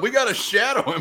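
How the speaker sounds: play-acted, shrill, very high, repeated yelling. Retelling what a fan in the section kept yelling: imitating a fan yelling. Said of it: "But he was yelling".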